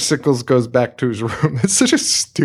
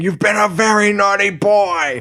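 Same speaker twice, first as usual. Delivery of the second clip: mock scream, much higher, slower; 8 semitones higher than usual. Describing people beating a man, retelling how they scream at him. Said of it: "they're just screaming".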